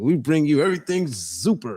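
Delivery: low, booming mock radio announcer voice. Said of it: "Is that you gonna say?".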